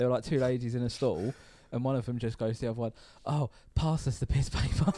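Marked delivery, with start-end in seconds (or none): 3.3-4.9 airy, breathy female voice. Retelling what a woman in a toilet stall said to another, in a breathy woman voice. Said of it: "I like the breathy woman voice you did for that".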